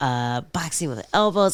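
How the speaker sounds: normal talking voice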